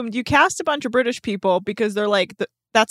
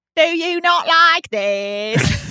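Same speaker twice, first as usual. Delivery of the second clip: high, very slow cockney accent, this stretched long; 6 semitones higher, 3 dB louder than usual. Answering another speaker's teasing about the accent: put-on cockney accent. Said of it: "proper cockney there, love".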